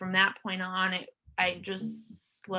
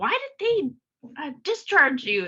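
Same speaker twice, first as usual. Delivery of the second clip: put-on frustrated tone, higher pitched and louder; 7 semitones higher, 5 dB louder than usual. Recalling what a man said when she was wheeled back into the emergency room, mock-frustrated. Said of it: "hearing his frustration in his voice".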